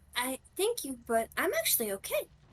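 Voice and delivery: soft, hushed half-whisper under the breath. Playing a character who half-whispers thanks while declining help: half-whispering in character. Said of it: "she just kinda whispers at it".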